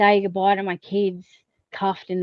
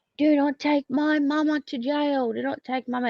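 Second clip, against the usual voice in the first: put-on, high-pitched, screaming little child voice; 7 semitones higher than usual. Retelling a young son's plea beside a police car: imitating a child screaming. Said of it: "started screaming".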